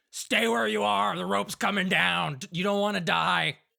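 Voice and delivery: rough-edged gruff call. Narrating a scene, voicing someone calling down to two people on a ledge, gruff voice. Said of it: "will very easily hear this gruff voice say".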